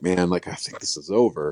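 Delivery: normal talking voice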